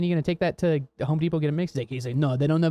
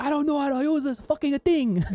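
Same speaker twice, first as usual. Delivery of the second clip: put-on strong Italian accent, much higher pitch; 10 semitones higher than usual. Retelling an italian painter at work with his son, italian accent impression. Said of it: "He's like really Italian".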